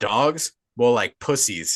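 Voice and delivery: play-acted cocky, fully confident, self-assured delivery. Retelling a character's line to the others: imitating confident speech. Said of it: "with pure confidence as he says".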